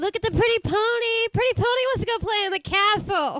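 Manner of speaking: goofy cartoon donkey voice. Quoting a Shrek scene as Donkey: Eddie Murphy as Donkey voice. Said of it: "sound better at that role than Eddie Murphy".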